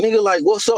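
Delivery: showing-off, swaggering tone. Retelling a man who was nearly backed into and showed off for his girl: imitating someone acting tough. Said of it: "trying to act off in front of his girl".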